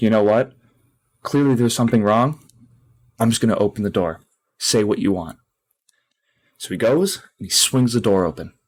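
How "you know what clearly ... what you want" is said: plain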